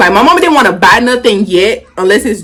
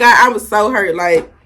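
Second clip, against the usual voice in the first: ordinary delivery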